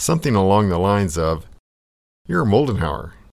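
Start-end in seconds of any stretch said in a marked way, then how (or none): 2.3-3.0 put-on thick, heavy German accent on English. Retelling what an elderly man said at the urinal: heavy German-accented English. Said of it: "he says in a heavy German accented English".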